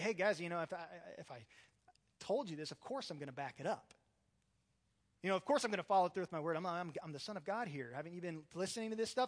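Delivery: knowing, casual, of-course sarcastic ribbing. Acting out Jesus speaking in a Bible verse: sarcastic Jesus paraphrase. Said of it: "I almost see this as sarcasm".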